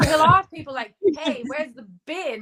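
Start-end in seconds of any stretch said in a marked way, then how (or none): 1.2-2.4 put-on American accent with deep Georgia flavour. Retelling how her husband asks people for the bin: imitating husband's American accent. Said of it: "he says them in an American accent".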